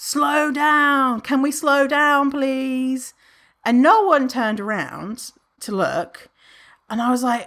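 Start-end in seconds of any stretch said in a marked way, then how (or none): 0.0-3.1 high, drawn-out calling out. At the back of a group running downhill, calling to the others ahead, retelling a shout. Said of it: "I'm literally shouting".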